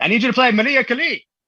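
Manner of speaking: loud, put-on Mexican Spanish accent on English. Retelling a request from a woman from Yucatan, imitating a Mexican woman's accent. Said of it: "just the impersonation is great".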